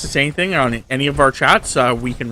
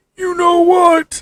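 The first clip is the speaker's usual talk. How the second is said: put-on old man voice, very high and loud; 5 dB louder than usual. Redoing the same line to sound like an old man. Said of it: "That's more like old man".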